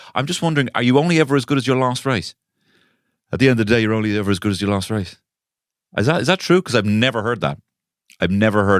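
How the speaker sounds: heavily sarcastic, feigned innocent puzzled wondering. Complaining about a catchphrase repeated across six seasons of a show, sarcastic tone. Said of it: "I'm being sarcastic".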